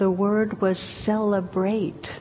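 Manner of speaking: acted choking sob, words caught in a sob. Storyteller giving the old abbot's words, retelling in a choking voice. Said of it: "And in a choking voice".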